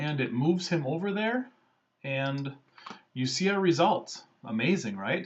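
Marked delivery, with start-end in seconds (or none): 4.4-5.3 dry, ironic, mock-impressed sarcastic praise. Showing viewers poor image-editing results, sarcastic. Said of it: "Yes, I'm being sarcastic".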